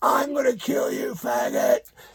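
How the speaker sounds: very high, angry, mildly yelled, furious tone. Retelling how a man who dived onto the stage grabbed the speaker and screamed: retelling a scream. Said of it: "started screaming".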